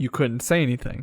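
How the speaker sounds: ordinary talk, nothing marked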